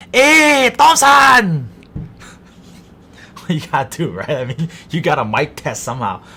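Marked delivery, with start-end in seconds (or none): 0.1-1.7 very high, very loud put-on Italian accent. Calling out to Thompson while testing the mic, put-on Italian accent. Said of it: "channeling my inner Italian".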